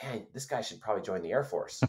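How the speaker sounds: under-breath muttering. Retelling what a man said after looking at his test scores: retelling a mutter under his breath. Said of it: "And under his breath".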